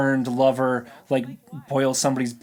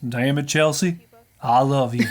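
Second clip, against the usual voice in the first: bad Western accent, still too cowboy-ish. Retrying an imitation after being told it was terrible, bad impression of his accent. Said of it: "I'm working on it".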